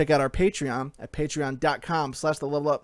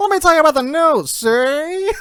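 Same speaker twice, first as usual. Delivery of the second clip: put-on old-timey newsreader voice, higher and louder; 13 semitones higher, 10 dB louder than usual. Trading impressions in conversation, doing an old-timey newsreader voice. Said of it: "like an old timey like newsreader".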